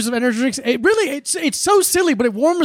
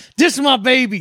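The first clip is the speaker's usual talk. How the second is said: put-on tough guy voice, big hard-man bravado. Retelling a funny video of a man holding a baby: imitating a big tough guy. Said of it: "like a big tough guy".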